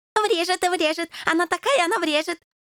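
joyful, gleeful, eager, high-pitched voice. Backing up a companion's threat to hit someone, he chimes in: joyful. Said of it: "радостно закивал Дезертир".

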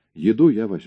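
ordinary delivery

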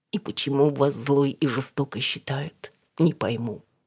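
usual speaking voice

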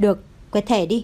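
ordinary delivery, nothing marked

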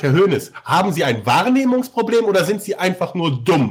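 plain

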